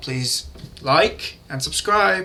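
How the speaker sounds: very slow, oddly drawn-out, stretched-out delivery.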